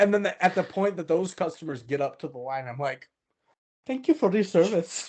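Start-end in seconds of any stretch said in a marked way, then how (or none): 3.8-5.1 put-on Indian accent, put on. Retelling thanking customers at the line: put-on Indian accent. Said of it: "my Indian accent".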